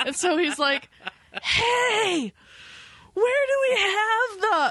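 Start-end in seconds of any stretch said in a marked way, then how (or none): 1.4-4.7 put-on very high, slow, drawn-out call on hey. Retelling a man shouting to his co-worker across a big store, retelling a shout. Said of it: "he shouts across the store".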